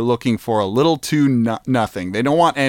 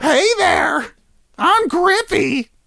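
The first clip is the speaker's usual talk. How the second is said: goblin voice pitched way up high. Recalling a goblin NPC from their game, the speaker shows how he sounded in Grippy goblin voice. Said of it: "That's what he sounded like".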